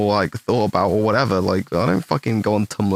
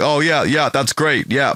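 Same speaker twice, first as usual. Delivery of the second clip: high, heavy, obvious sarcasm with fake enthusiasm; 5 semitones higher than usual. Explaining how a friend signals sarcasm by imitating him; imitating Seamus's sarcastic tone. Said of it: "he changes his tone of voice".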